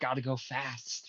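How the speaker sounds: close, leaning-in half-whisper. Leaning in to half-whisper a taunt at a foe: half-whispering in character. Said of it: "I'm gonna lean in and whisper".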